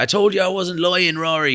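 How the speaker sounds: put-on yelled Irish accent. Retelling the studio engineer yelling from the background: Irish accent imitating Chris. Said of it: "crucify me for that accent".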